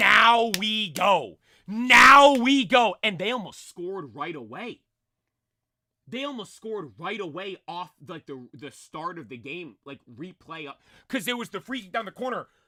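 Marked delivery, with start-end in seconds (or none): 0.0-3.0 very loud, very slow, drawn-out, hyped fan scream. Retelling watching a match after a foul; retelling a hyped scream. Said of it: "I'm screaming, screaming".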